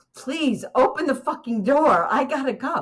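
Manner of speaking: desperate urgent voice. Retelling begging friends in a parked car to open the door: retelling an urgent plea. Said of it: "because I had urgency in my voice".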